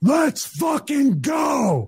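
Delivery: acted-out shrill, high-pitched burst of screaming. Retelling a moment on a paused ride: imitating his own scream. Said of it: "I scream".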